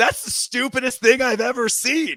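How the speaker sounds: shrill, high-pitched yell. Retelling dad's reaction when the offense went out on fourth down: imitating dad yelling. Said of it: "He yells out loud, as loud as I've ever heard him".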